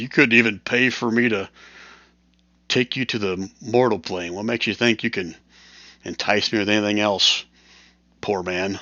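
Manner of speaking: amused, chuckling, scornful, mocking dragon voice. Voicing a dragon who chuckles at a rider's offer: chuckling dragon taunting. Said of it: "turns back toward you a little bit and kinda chuckles".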